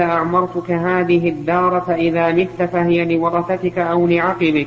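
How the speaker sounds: ordinary talk, nothing marked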